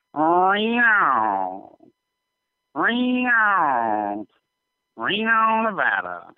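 high, drawn-out cat-meow Reno. Imitating a cat whose meow sounds like the word reno: imitating a cat meowing reno. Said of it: "So imagine a cat saying Reno".

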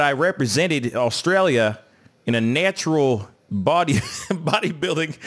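poor fake Australian accent. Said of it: "that accent that I tried to do".

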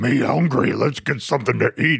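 crazy, wild monster voice. Complaining about the Venom guy who talks all the time: Venom voice. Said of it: "It's a fucking cookie monster".

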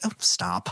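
put-on affectionate, fond, teasing hushed tone. Retelling a character's reply to a self-effacing comment: imitating Alice's fond partner hush. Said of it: "or partner sort of way of just".

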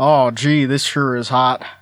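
deep, put-on southern American accent. Voicing a character's line for another speaker, in a southern accent. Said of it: "has a southern accent for some reason".

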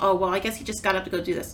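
usual speaking voice

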